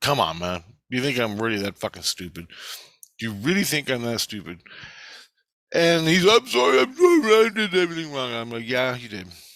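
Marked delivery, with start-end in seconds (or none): 6.3-8.3 mock whining and crying, much higher, louder, slower. Retelling an apology from a man they confronted, imitating someone whining and crying. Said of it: "after him whining and crying".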